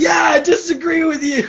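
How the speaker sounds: play-acted, shrill, high-pitched yelling burst. Recounting being pulled in and called his kid, the speaker retells a yell. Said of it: "so I just yelled".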